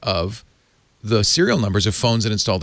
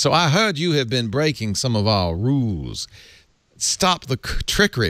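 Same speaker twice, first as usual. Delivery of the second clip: put-on firm, insistent voice in a fine Auburn accent. Reading out a quote, doing Tim Cook in an Auburn accent. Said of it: "I should do Mister Cook in a, in a fine Auburn accent".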